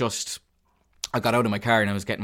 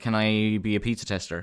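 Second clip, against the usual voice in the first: put-on joking tone, slower. Retelling a chat about a backyard pizza oven, the speaker quotes themself: retelling a joking request. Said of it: "in a joking manner".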